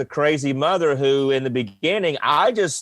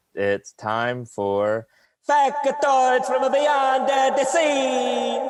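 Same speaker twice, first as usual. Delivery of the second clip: very high, very slow, swooping fake Italian accent; 10 semitones higher than usual. Introducing a segment after being asked to use an Italian accent: put-on Italian accent. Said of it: "you gotta do it in the accent".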